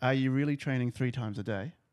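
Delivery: plain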